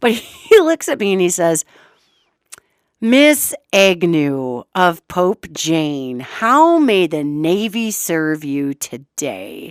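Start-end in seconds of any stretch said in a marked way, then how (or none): 3.0-9.7 very slow, patronizing, condescending polite drawl. Retelling how a Navy man greeted her, in a mock-condescending tone. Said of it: "he just said it so condescendingly".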